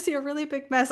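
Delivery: put-on gleeful, happy little kid calling out, pitched high. Retelling how her child called out to her, imitating a child calling out happily. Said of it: "happily call it out".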